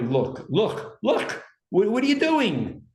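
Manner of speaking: rising, high, desperate pleading with urgency. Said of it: "When you tell somebody".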